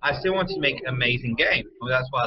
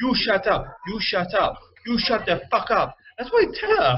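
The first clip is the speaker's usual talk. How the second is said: put-on Japanese accent, high and swooping; 8 semitones higher than usual. Retelling what a man said to a female designer, imitating his Japanese accent. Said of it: "in his Japanese accent".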